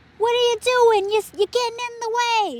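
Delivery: very high, fake New Jersey accent. Describing honking in big cities, the speaker voices a driver in a put-on Jersey accent. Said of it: "I guess I was like a Jersey accent".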